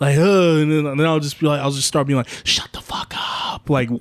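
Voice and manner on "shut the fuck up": slow whisper under the breath. Retelling how they hush noisy people in a theater: imitating own whisper. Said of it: "whispering it".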